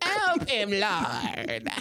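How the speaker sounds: put-on high, swooping, old-time preacher's pulpit voice. Imitating a preacher, the speaker does the Pastor Campbell voice. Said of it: "that's the Pastor Campbell voice".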